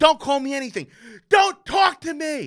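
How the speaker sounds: very high, loud, shrieked screaming. Recounting a man in an elevator yelling at him as a child, imitating a man screaming. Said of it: "And he's screaming".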